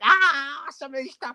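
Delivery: high, far-off panicked scream. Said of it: "he's screaming as the machine just goes wild".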